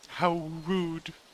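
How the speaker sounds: high, disembodied forest spirit voice, as on the wind. Voicing a forest spirit heard on the wind: forest spirit voice on the wind. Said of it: "you'll hear a voice on the wind".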